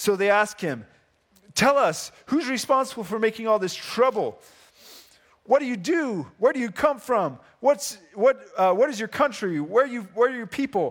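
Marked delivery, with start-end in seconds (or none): 1.5-10.9 mock badgering tone, much higher. Retelling the Jonah story, voicing those questioning him; imitating them badgering Jonah. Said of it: "start just badgering him with questions".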